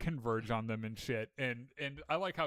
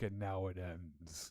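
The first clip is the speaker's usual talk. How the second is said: dramatic, very slow, theatrical delivery; 7 semitones lower, 7 dB quieter than usual. Retelling a show character's big moment before a fight, imitating a dramatic line. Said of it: "he gets all dramatic".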